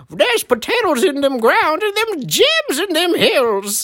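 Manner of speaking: put-on old prospector character voice. Doing a voice bit with friends about Idaho, old gold miner voice. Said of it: "Do the old gold miner guy".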